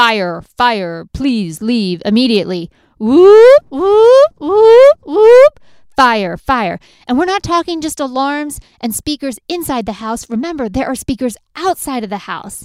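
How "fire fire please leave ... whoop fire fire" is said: very loud, swooping, siren-like alarm blare. Retelling the smoke alarm going off in the house, imitating screaming alarm speakers. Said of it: "the speakers start screaming".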